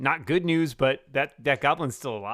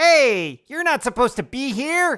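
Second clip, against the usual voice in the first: shrill, very high, loud goblin creature voice; 12 semitones higher, 8 dB louder than usual. Narrator voices a goblin speaking to a player, in a goblin voice. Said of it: "goblin says to you".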